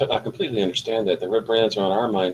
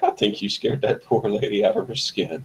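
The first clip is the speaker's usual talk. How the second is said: spoken through a chuckle, broken by little laughs. Turning to Thal in character after leaving the shop: chuckling while speaking. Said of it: "kinda chuckling".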